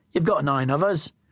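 ordinary delivery

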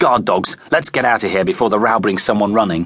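ordinary delivery

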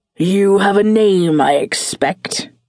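threatening, menacing growled delivery. Wincing after his whiskers are pulled away, a man asks the narrator's name, menacing growl. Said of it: "he growled, sounding quite menacing".

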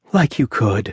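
low mumble under breath. A woman turns away from a man's challenge, mumbling under her breath. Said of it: "She mumbled under her breath".

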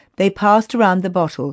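plain reading voice

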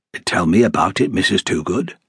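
quiet, softly spoken. Narrating a reply to a pleading woman, said quietly. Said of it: "Clough said quietly".

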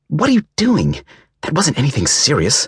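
very high, swooping hissed voice. A narrator reads a woman whirling around to confront a man, hissing. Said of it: "she hissed".

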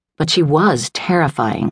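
ordinary delivery

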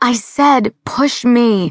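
slow, deliberate, high, drawn-out yell. A woman yells to the women cowering on the other side of the pen: yelled. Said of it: "she yelled".

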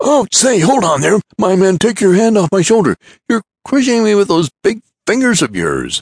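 very high-pitched, shrill, loud, remonstrating. A visitor protests to the giant gripping his shoulder, remonstrating. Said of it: "the visitor remonstrating with the giant".

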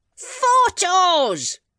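very high-pitched, shrill roaring bellow. A husband shouting at his deaf wife, who keeps mishearing him, roared. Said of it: "roared her husband".

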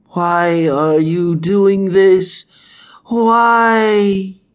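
shrill, slow, drawn-out hiss cracking into a scream. A man chained to an altar, being carved deeper, hissing then breaking into a scream. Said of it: "hissed the man".

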